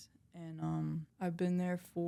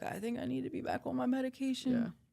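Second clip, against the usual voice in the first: put-on tearful crying voice, higher; 7 semitones higher than usual. Retelling arriving at a sponsor's house: imitating own past crying.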